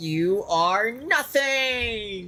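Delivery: high yell, nothing drawn out. Recalling a game character's ultimate voice line: imitating Phoenix's yell. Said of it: "And I just hear".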